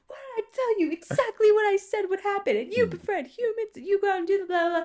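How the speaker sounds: shrill scolding scream, very high-pitched, sustained. Imagining how Splinter would scold the turtles otherwise: imitating Splinter screaming. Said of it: "screaming at them".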